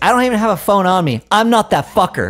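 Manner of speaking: loud, high delivery. Retelling a remark to a stranger at the gym: imitating a loud retort. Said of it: "Say fucker loud".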